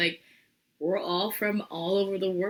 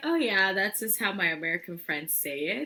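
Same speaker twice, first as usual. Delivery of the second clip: ordinary delivery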